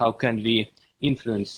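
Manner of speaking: very soft, barely audible speech. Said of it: "could you speak a little louder".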